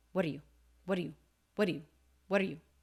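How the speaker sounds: rapid, linked-together words. Demonstrating how a phrase is said, really quickly and linked together. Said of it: "Said really quickly, linked together".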